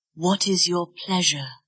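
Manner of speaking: soft, quiet, nearly whispered. Looking into a scene partner's eyes during an acting exercise, quiet, almost a whisper. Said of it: "Say it quietly, almost in a whisper".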